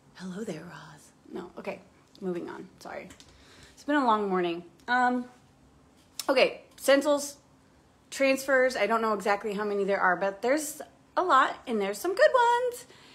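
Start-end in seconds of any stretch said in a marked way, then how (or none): 0.1-1.0 very low, hushed murmur. Greeting a viewer who joined: Silence of the Lambs voice. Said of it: "That's my Silence of the Lambs voice".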